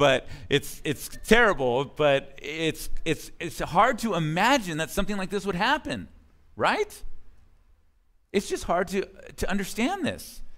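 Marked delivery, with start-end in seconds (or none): 0.0-3.3 slow speech, laughing through the words. Commenting on a grim scripture passage, laughing while talking. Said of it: "I'm sorry I'm laughing".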